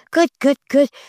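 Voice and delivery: very high, happy, gushing excited voice, long "oh". Showing how the speaker praises the dogs when they find it: happy high excited voice. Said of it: "happy high voice, excited, happy talk".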